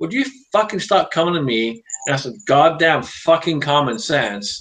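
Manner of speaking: half-kidding, exasperated, mock-angry rant, acted out. Retelling snapping at a person who kept asking questions, retelling a joking rant. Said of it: "I said it in a kind of jokingly manner".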